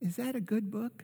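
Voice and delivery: very high, soft, sweet little voice. Retelling a flight, quoting the older lady who greeted them: imitating a sweet little voice. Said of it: "I hear this sweet little voice".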